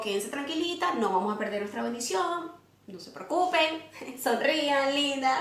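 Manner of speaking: soft, soothing, calming hush.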